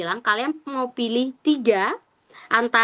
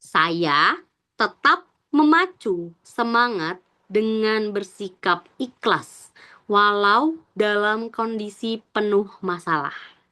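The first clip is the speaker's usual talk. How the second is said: unhurried, careful, slow, deliberate reading. Reading an example test question aloud to listeners, speaking slowly. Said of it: "aku juga ngomongnya pelan-pelan".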